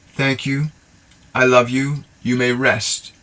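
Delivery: gentle unhurried delivery. Guiding listeners through a breathing exercise, showing how to say the phrase; slow and gentle. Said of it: "say it very slowly and gently".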